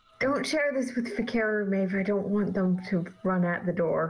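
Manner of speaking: quiet whisper in character voice. Whispering in a companion's ear in character about a gift of the gods: whispering in character. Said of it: "We're whispering".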